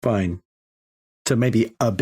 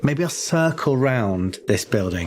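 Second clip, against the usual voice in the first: normal talking voice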